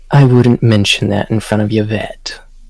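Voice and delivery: whispering in a character voice. Voicing a character stepping out the door, whispering into Becker's ear: whispering in character. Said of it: "he's going to whisper into Becker's ear".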